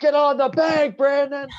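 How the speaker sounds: high, loud screaming. Describing a skit where a dad yells at his son batting, retelling a scream. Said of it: "he's just screaming at him".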